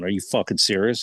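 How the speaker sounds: ordinary delivery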